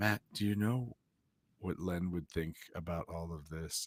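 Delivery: hushed, very quiet, tender, gentle murmur. Retelling what he asked Matt, imitating his quiet, gentle voice. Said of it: "quiet, gentle".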